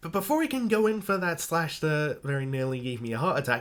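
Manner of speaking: ordinary delivery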